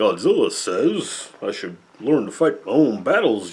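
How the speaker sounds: as goofy as possible. A speaker describing a movie's English dubbing quotes the character in a goofy Minya dub voice. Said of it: "they give him the goofiest voice".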